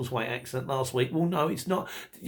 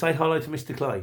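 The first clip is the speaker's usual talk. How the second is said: ordinary talk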